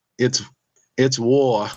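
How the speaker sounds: imitated Boston accent. Retelling the breakup, the speaker quotes the woman he left in a Boston accent. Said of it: "she had that Boston accent".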